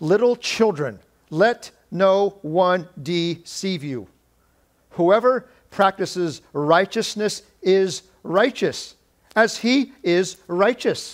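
slow, deliberate reading.

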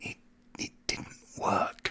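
very quiet, breathy, barely-there whisper. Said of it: "I whisper this to an American".

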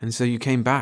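plain reading voice

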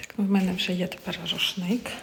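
hushed whisper. Showing a shared room while a roommate sleeps, whispering. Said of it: "Тому я пошепки".

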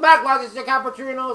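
talking with mouth full. Starting a gameplay session while eating a cookie: talking with a mouth full. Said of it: "I have a cookie in my mouth".

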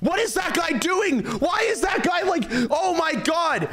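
high-pitched, frustrated shouting.

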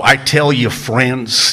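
put-on cranky, cantankerous delivery. Quoting a radio preacher on suffering: J. Vernon McGee cranky voice. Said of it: "in that cranky vo-".

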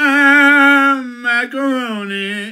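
high, stretched-out put-on voice. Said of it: "this one video with the macaroni doing the Macarena".

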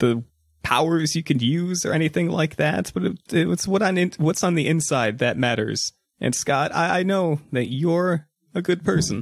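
put-on a little drunk, stumbling old man. Voicing Grandpa checking in before leaving: acting a little drunk. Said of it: "I'm also a little drunk".

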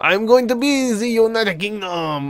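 put-on French accent. Announcing the team choice while joining a game server: put-on French accent. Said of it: "I don't know why I'm saying it with a French accent".

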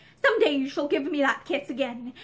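ordinary delivery

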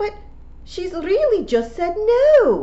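shrill blurted cry, very high and very loud. A listener cuts into the conversation to object, bursting out. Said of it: "Fionn burst out".

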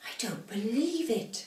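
barely-there, faint, slow whisper. Reading a story: Granny slides past as the house moves, faint whisper. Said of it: "whispered Granny faintly".

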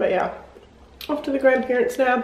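talking with mouth full of food. Vlogging on the way to the grandparents', talking with mouth full. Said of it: "I shouldn't be eating with my mouth full".

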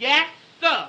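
loud, shouted, yelled-out voice. Told to stop mumbling and speak up like a man, answering by shouting. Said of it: "Don't shout at me".

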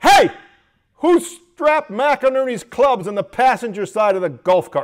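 booming, very loud barked delivery. Recounting how a supervisor drove the pro shop workers, retelling a barked order. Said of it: "Don would bark out".

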